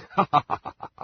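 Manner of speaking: short laugh. In a drama, a character laughs after being handed something to read, laughing. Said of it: "Why are you laughing?".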